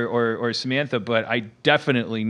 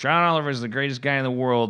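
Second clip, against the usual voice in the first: ordinary talk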